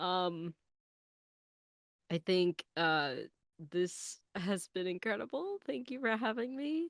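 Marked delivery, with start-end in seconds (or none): 3.7-6.9 teary, near-crying voice, pitched up. Thanking the others for having them, eyes leaking: teary-eyed. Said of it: "my eyes are leaking".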